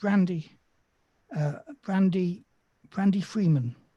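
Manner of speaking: small, subdued voice, settled down and calmer. Game master voicing a woman, now calmer, giving her name; small voice. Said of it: "she says in a small voice".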